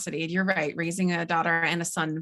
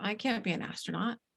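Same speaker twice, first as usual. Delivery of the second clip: put-on soft, tiny voice of a four-year-old girl; 3 semitones higher, 8 dB quieter than usual. Retelling what a four-year-old girl answered when asked a question: imitating a tiny four-year-old's voice. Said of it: "her little teeny tiny four-year-old voice".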